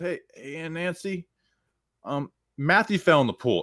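put-on high, breezy, offhand nonchalant delivery. Retelling a cousin delivering prank news to an aunt: imitating a nonchalant announcement. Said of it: "he says it so nonchalantly".

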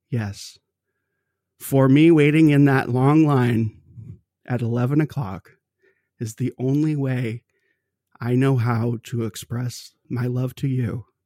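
ordinary talk, nothing marked

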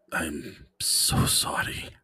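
barely voiced, hushed whisper. Voicing Vadim apologizing to a fading spirit: whispering in character. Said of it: "And Vadim whispers".

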